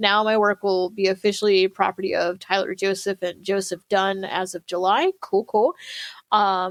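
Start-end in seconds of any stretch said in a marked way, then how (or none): none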